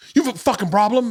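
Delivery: put-on aggressive, very high-pitched, confrontational voice. Retelling a run-in with a man who almost hit the speaker's children, imitating an aggro older man. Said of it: "but he was so aggro".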